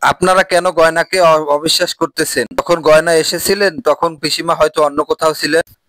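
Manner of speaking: plain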